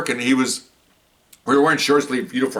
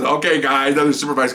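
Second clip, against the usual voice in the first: ordinary talk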